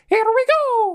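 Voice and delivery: squeaky, very high-pitched video-game hero voice. Imagining a movie trailer's final credits, the speaker does a Mario impression. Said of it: "That's a really good impression".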